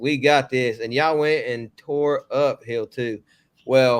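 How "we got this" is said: ordinary delivery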